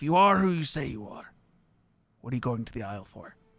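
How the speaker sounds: hushed whisper. Playing a character in a tabletop game, whispering back to another character. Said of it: "He like whispers back to Drell".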